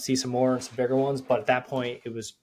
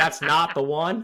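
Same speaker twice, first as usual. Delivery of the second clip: mock keyed-up, excited voice; 4 semitones higher, 4 dB louder than usual. Retelling what another hunter said when a deer showed up, imitating an excited voice. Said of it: "in an excited voice is what I heard".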